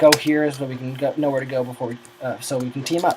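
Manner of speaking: usual speaking voice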